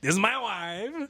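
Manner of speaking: bad Eastern European accent. Chatting with a friend, the speaker tries a Borat impression. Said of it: "that's the best I could do".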